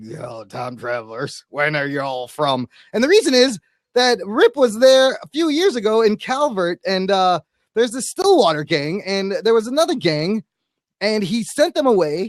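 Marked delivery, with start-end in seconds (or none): 0.0-2.7 low, gravelly, grinding voice. Quoting a character calling out the time travelers: gravelly Jonah Hex voice. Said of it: "talk with even more gravelly voice than Mick Rory".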